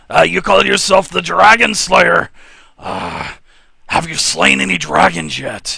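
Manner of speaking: loud, creaky orc voice.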